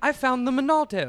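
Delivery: put-on high-pitched, heroic voice in a British accent.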